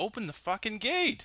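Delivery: put-on very high, shrill, raging, angry scream. Retelling how someone at the gate confronted a security guard, imitating someone screaming. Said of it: "he's like screaming at some security guard".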